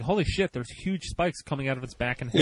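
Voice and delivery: ordinary talk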